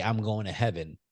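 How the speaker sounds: ordinary talk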